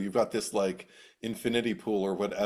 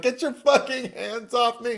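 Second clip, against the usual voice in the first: very high, loud, shrill, terrified screaming; 7 dB louder than usual. Recounting a horror scene, acting out the wife's scream.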